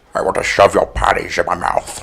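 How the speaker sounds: low, rough, gravelly voice. Asked to do a Sean Connery voice talking dirty: Sean Connery voice. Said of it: "do your Sean Connery voice".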